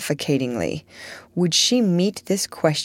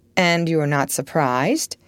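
plain reading voice

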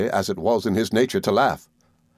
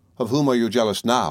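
plain reading voice

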